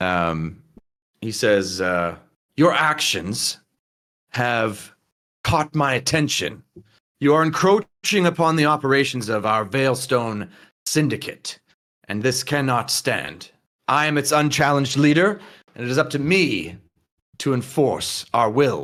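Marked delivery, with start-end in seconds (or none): 2.5-18.8 firmly restrained, controlled anger, fury held in check. Reading out what the syndicate leader says to you all, restrained anger. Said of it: "He seems very angry, but like in a restrained way".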